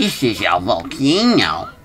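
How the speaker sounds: put-on, slow, swooping cartoon character voice. On an elevator tour into a volcano, Mario World cartoon voice. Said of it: "That's my Mario World cartoon voice".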